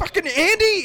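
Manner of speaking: mock, shrill, high-pitched scream. Retelling how they yelled up to him while watching, retelling a scream. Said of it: "I'm screaming upstairs".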